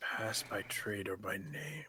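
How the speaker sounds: very quiet, slow, barely audible murmur. Playing a character reading words on a lock to himself: muttered under breath. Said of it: "I kinda sit under my breath to myself".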